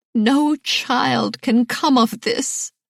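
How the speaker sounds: choked, strangled words. Narrator reading a woman's line in a novel, strangled voice. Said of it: "she finally said in a strangled voice".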